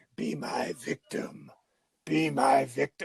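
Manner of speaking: deep, slow, breathy whisper, dropped way down. Retelling a movie scene where the villain speaks to her: deep Tony Todd voice.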